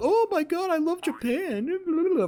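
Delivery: very high, very slow, drawn-out gushing. Mocking people who hype up japan: imitating gushing japan fans. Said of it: "the people that fucking gas up Japan".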